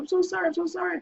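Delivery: mock very high, hysterical, tearful sobbing voice. Retelling a car crash, the speaker quotes the other driver, imitating hysterical crying. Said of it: "She's crying hysterical".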